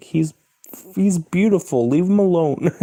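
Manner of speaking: high-pitched, loud, doting tone.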